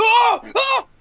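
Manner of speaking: high, loud pained screaming. Voicing an enemy whose skull is being crushed: screaming in pain. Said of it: "the guy's screaming".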